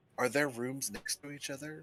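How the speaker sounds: hushed whisper. Asking another player a question on the side, whispering. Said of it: "everyone can hear us whispering".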